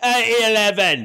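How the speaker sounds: put-on Cockney accent. Repeating a date code as a joke: cockney accent. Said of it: "Sounded Cockney".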